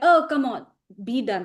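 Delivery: ordinary talk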